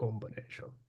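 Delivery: very quiet whisper under the breath. Showing how the word gets said each time it is read: whispering the word. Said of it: "Just kinda whisper it".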